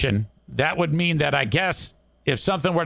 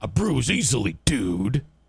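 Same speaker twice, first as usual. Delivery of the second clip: mock annoyed, irritated, pissed-off brush-off tone; 4 semitones lower than usual. Retelling a brother's curt reply while walking away: imitating a pissed-off tone. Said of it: "Like that way, that tone".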